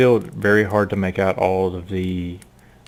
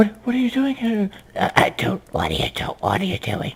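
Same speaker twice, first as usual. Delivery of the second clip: put-on very high-pitched old hag voice; 13 semitones higher than usual. Narrator voicing a woman as the party gets her attention, hag-like voice. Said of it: "It begins to go back into that hag-like voice slowly".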